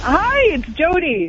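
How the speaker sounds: cheerful bright voice. Jody calling in and introducing themself, happy. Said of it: "You sound happy".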